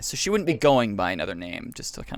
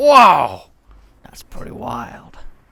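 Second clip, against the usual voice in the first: booming, very loud, swooping big-dude mobster voice; 6 semitones higher, 10 dB louder than usual. Retelling his reaction after taking the code into a back room, mobster big-dude voice. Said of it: "I was trying to go like you know kind of mobster big dude".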